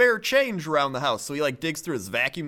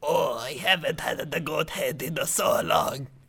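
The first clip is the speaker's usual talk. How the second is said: put-on slow elderly man voice with Italian accent. Retelling a video of an old Italian man eating goat head: imitating an old Italian man. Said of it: "It's like this old Italian man".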